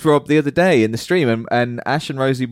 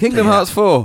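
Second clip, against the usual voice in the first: put-on excited voice, pitched higher; 9 semitones higher, 4 dB louder than usual. Doing an impression of a colleague being excited. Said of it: "an impression of Rosie being excited".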